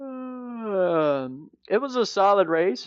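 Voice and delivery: yawning through the words. Asked what they thought of the Xfinity race, answering while yawning. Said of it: "I keep yawning".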